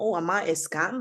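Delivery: ordinary delivery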